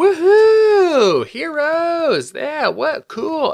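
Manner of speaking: mock very high, swooping, drawn-out whooping cheer. Acting out how a film's audience is meant to react: imitating a cheering audience. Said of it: "for the audience to be like".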